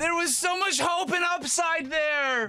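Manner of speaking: mock anguished cry.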